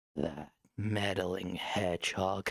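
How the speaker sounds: very low, deep, terrifying growling villain voice. Comparing versions of the cartoon villain, the speaker tries a deep growling Robotnik voice. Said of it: "had like a really deep growl in that version".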